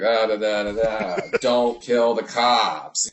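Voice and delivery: hammed up, slow, drifting off at the end. Imitating an actor trailing off a line: imitating Malkovich trailing off. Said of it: "He would trail off on things".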